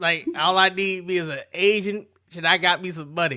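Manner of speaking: put-on talking in an old-school pimp voice. Describing what he sounds like, the speaker is imitating an old pimp. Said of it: "You know what he sound like? An old pimp".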